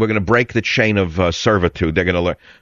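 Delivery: ordinary talk, nothing marked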